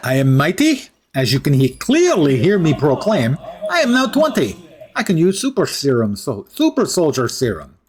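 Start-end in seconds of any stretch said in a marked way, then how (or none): 0.0-4.6 bad, put-on Russian accent. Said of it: "keep up bad Russian accent".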